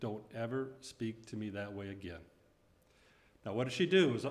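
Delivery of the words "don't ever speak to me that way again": calm, steady, firm, unbending, soft voice. Speaker recounts what a woman said right after slapping them, retelling a calm, firm command. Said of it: "in a calm, firm voice".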